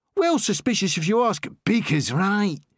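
younger-sounding London voice. Reading a story aloud, voicing a character who cuts in: London accent. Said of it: "with a London accent".

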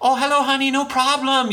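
very high-pitched, put-on Chinese accent. Describing a film character, imitating Raymond's Chinese dad accent. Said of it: "I apologize about the accent".

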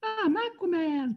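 high squeaking voice. Describing a video game boss who lifts his leg, mimicking his squeaky voice. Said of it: "he lifts his leg and he squeaks".

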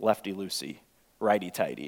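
very low, hushed, sarcastic mutter. Retelling a man watching the speaker turn a broken screw, mock-sarcastic retelling. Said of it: "he kind of said that sarcastically".

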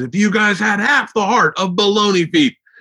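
mock earnest, heartfelt, utterly sincere tone. Retelling a coach talking to his track team: imitating a sincere coach. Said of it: "so sincere".

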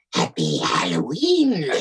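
low, swooping put-on horned demon voice. Wearing a demon mask, greeting the children at the door in a horned demon voice. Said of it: "I had this mask of this like horn demon guy ... I did a voice".

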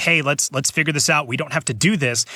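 ordinary talk, nothing marked

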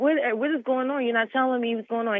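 mock words pushed out through tears. Retelling being handcuffed without explanation, reenacting own crying words. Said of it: "and I just start crying".

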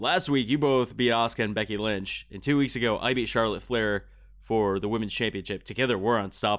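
plain

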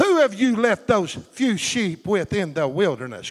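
scornful, belittling, mocking sarcastic sneer. Quoting a brother's sarcastic question to David: imitating a mocking sarcastic tone. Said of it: "Mocking him".

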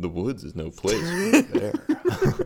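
very slow, sultry, sexy, swooping drawn-out voice. Quoting a cartoon bear's movie line: Martin Lawrence sexy voice. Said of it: "he said it with, with Martin Lawrence, the sexy voice".

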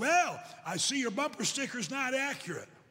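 half-sarcastic, half-joking. Retelling a traffic stop over a bumper sticker: imitating a sarcastic, joking policeman. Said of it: "kinda sarcastic and kinda joking".

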